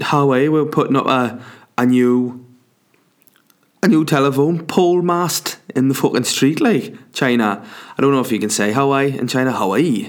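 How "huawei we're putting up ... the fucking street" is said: Newcastle Tyneside Geordie way of speaking. Speaker mimics a local to show how a company name sounds: Geordie accent. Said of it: "that's what it sounds like with a Geordie accent".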